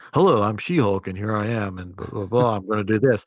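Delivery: put-on voiceover booth voice. Mocking how the show's lead sounds recorded in a booth: She-Hulk voice in a voiceover booth. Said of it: "It sounds just like she's in a vo-, booth".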